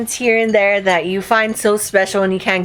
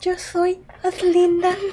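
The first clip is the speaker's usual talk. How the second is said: high, very slow, careful Spanish lisp; 9 semitones higher, 3 dB quieter than usual. Imitating how Ozzy talks: imitating Ozzy with a little lisp. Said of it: "Ozzy talks like this".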